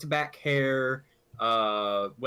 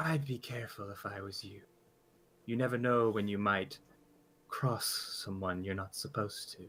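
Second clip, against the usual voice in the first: quieter voice, speaking close in the ear; 3 semitones lower, 7 dB quieter than usual. Narrator voicing a stranger holding a dagger to a player's side, voice close in ear. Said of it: "you hear a voice in your ear".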